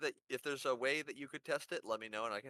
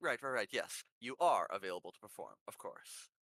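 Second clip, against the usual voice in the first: strained, effortful, forced assertive tone; 4 semitones lower than usual. Voicing a character answering the performers, trying to sound assertive. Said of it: "like she's trying to come across more assertive".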